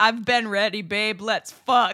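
talking through a chortle, chuckling. A male story character answers a woman's question, chortling while speaking. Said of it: "Leonard chortles and says".

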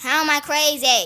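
very loud, full-volume screaming. Answering someone who just called you crazy, screaming. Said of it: "Why are you screaming?".

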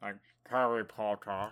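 low-pitched voice with jaw pulled back. Showing a listener how he talked after jaw surgery, try a not-quite Alan Rickman impression. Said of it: "So he talked like. This, I can't really do it".

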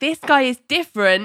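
loud, emphatic insistence. Retelling how he insisted the new therapist is different, retelling a loud insistence. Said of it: "he says it so loudly that it makes a passerby stop and stare".

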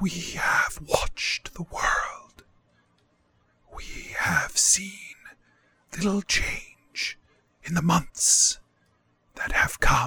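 rustling, windy, airy whisper. A game master voices the Green Man reporting on the world: whisper like wind. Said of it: "who is covered head to toe in leaves and vines. From your stories, you believe this is the Green Man. / who is covered head to toe in leaves and vines. / which is a man, / and the voice that comes fro".

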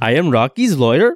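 loud, fake Indian accent. Speaker acts out Rocky's lawyer introducing himself, put-on Indian accent.

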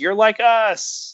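very high mock shouting. Retelling how a crowd member answered a speech: imitating someone shouting. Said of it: "someone shouts".

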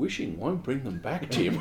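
put-on flat, quiet delivery. Recalling a bit from a show, the speaker quotes it, imitating Graham's totally flat deadpan. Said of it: "Graham just totally flat does".

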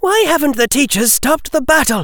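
angry, very high-pitched delivery. While others watch a battle, a girl speaks up; angry voice. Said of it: "her voice angry".

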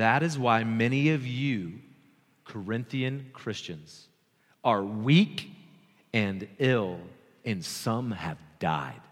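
unhurried read-aloud delivery. A speaker reading a Bible passage aloud to listeners, reading very slowly. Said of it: "I'm going to read this very slowly".

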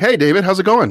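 acted very high-pitched, wildly cheerful, super upbeat voice. Retelling a zombie friend's greeting from a movie: imitating Jack's crazy upbeat voice. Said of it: "this crazy upbeat. He's like".

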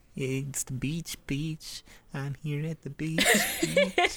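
sulky, slow mumble under the breath. Recapping a show, the speaker imitates Joey after losing a card game, muttering under his breath. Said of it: "just under his breath".

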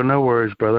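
ordinary talk

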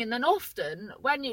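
ordinary delivery

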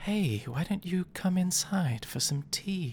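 high whisper, close in the ear. Voicing a creature leaning in to tempt a character: whispering in someone's ear. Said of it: "lean over to him and whisper in his ear".

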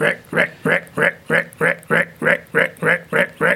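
rising, repeated croak like a green tree frog.

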